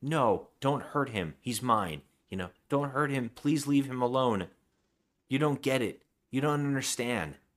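desperate, frantic, screaming outburst. Retelling a movie scene where a character pleads for her lover: imitating someone screaming. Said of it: "And she starts screaming".

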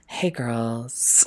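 mock soft sexy voice. Co-host joking about how someone sounded, mock soft sexy voice. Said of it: "like a soft and sexy voice".

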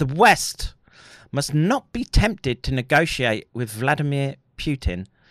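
ordinary delivery

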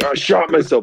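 acted-out, high-pitched screamed cry. Retelling a seventeen-year-old who shot himself in the leg: retelling a scream. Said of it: "he's just screaming".

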